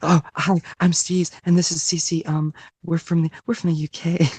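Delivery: ASMR whisper. After suggesting ASMR voices, the speaker introduces themselves and Cece: ASMR whisper voice. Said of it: "we can just do ASMR voices".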